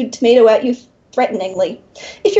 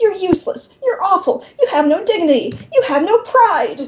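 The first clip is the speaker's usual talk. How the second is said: high, spluttering, horrified indignation; 7 semitones higher than usual. Narrating a demon shielding himself from flying tomato seeds, sputtering. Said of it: "he sputters".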